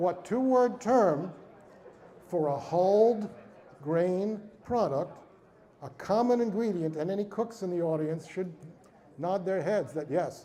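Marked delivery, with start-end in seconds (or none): 0.0-7.0 drawn-out, word-by-word, very slow deliberate reading. Speaker reads a quiz question aloud to the audience, reading very slowly. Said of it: "I will repeat it just as slowly".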